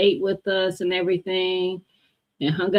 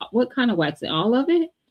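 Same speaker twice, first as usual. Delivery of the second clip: teasing tone, higher; 5 semitones higher than usual. Retelling teasing a friend about her waxing work: retelling own teasing. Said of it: "I was teasing her".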